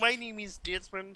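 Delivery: high, soft silly voice.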